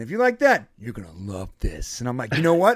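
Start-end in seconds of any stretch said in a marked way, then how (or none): 0.8-2.0 big showy put-on delivery, swooping and dramatic. Quoting a voice the other speaker sometimes does: imitating that voice. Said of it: "I hear you do that voice though. You're like".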